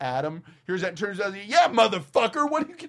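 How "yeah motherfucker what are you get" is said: shrill, very high, high-pitched acted screaming outburst. Retelling a friend yelling at some guys: imitating a friend screaming. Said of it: "screaming at these ki-".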